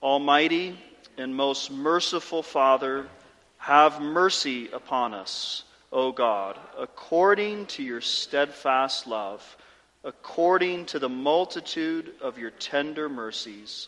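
slow, unhurried reading aloud. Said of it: "I want to read it more slowly".

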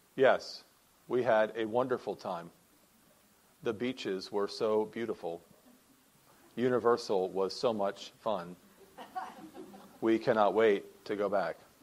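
low, flat, expressionless deadpan monotone. Speaker shows how a flat answer about an enjoyed trip would sound: flat monotone, deadpan. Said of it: "monotone voice and absolutely no facial expression".

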